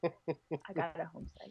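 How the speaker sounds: soft, slow, quiet secretive murmur.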